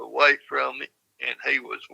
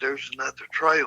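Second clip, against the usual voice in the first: imitated whisper. Retelling what was said to a companion on the trail: retelling a whisper. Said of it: "And I whispered to him".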